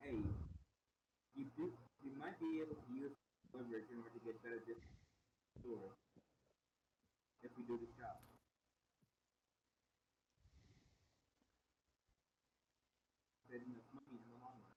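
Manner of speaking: hushed whispered aside. A player's character whispers a plan to another character during a game, whispering. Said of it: "I'm whispering to him".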